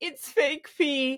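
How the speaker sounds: high, hysterical sobbing through the words. Retelling her answer to the specimen collector after coming out of the bathroom: imitating hysterical crying. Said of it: "started hysterically crying. I was like".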